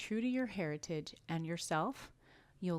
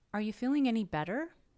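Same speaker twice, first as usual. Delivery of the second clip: yes-no question tune, pitch rising on "better"; 5 semitones higher, 6 dB louder than usual. Lesson on yes-no questions: rising pitch on better. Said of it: "We will raise our pitch at the end of the question".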